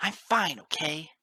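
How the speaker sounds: sudden, very loud, high, angry snarl. Narrator reads a character brushing off concern about his sore skull, snarling. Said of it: "he suddenly snarled".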